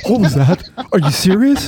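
mock frightened, timid voice. Retelling his own reaction in a scary clip: imitating his own scared self. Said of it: "me going".

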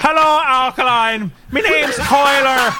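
clumsy, bad fake Irish accent, high and loud. Podcaster trying out the accent on air, bad put-on accent. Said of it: "I don't know that I can do it very well".

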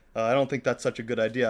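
ordinary delivery

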